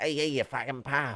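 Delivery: put-on proper South Midlands English accent. Discussing dialects, showing how someone from the South Midlands sounds. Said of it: "sounds like someone from the sa- like the proper South Midlands?".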